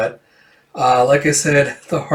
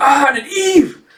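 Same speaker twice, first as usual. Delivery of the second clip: put-on screaming, higher pitch; 13 semitones higher than usual. Retelling a character diving through a door: imitating a scream. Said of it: "He screams".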